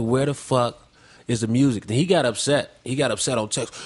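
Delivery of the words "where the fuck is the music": ordinary delivery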